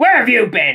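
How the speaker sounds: very loud, high, insistent demanding tone. Narrator reads one engine questioning another on his return, demanding. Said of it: "Demanded Arry".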